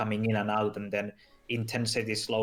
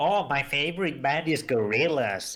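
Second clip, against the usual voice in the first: mocking put-on voice, higher pitched; 4 semitones higher, 3 dB louder than usual. Imitating a friend naming a favorite band: mocking imitation of a friend. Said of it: "he's like".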